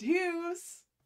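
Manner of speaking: put-on motherly voice. Voicing Deuce's mum calling her son: Deuce's mum voice. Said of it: "Deuce's mum voice".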